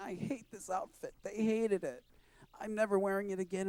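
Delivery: weepy, tearful crying voice. Retelling telling mom the outfit was hated, imitating own past crying. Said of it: "And I'm crying".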